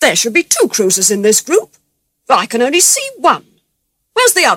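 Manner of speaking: angry, loud voice with rising pitch. The admiral, after examining the ships in his group, asks, angry. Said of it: "he said angrily".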